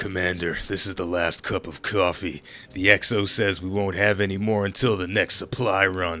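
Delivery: rough, gravelly, rock-chewing character voice, words ground out. Game narrator voices the character Medusa addressing the commander, gravelly Medusa voice. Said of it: "Medusa's got that gravelly voice like he's been chewing on rocks".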